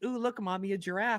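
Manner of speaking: put-on voice of a six-year-old kid. Mocking people who point out the obvious: imitating a six-year-old child. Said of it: "a six-year-old going".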